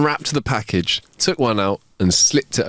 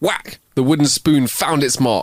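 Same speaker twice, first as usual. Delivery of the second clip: plain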